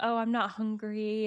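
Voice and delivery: mock, slow, spaced-out, zoned-out, lovesick dreamy voice. Retelling a funny scene, imitating zoned-out lovesick Ron. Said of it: "kinda, like, zoned out".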